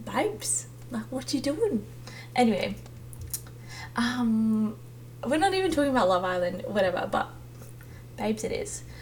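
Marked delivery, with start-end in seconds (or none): 0.0-1.8 soft, chatty, put-on English accent. Imagining friends' comforting reply, put-on English accent. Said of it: "my friends sometimes speak in English accents".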